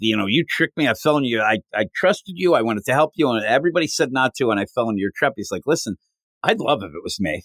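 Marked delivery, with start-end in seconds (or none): none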